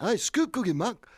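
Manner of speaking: high-pitched, put-on Liverpool English accent. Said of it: "Sounds a bit like [name] actually, you know his [name]'s like that".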